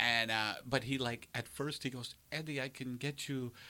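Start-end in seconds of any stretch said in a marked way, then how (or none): 2.3-3.5 soft, put-on Dutch accent. Quoting a comedy club guy talking to Eddie, in a Dutch accent. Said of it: "That's my Dutch accent".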